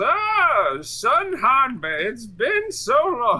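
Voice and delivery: very high, very slow, sing-song grandma voice. Imagining a grandma showing up in the story: put-on grandma voice. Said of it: "Hanbei's grandma comes out the woodworks and goes".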